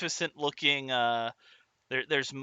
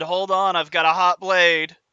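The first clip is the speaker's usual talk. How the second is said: very loud, very rough, gruff calling voice; 3 semitones higher, 8 dB louder than usual. Answering a knock from behind a door, in a very gruff voice. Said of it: "a very gruff voice".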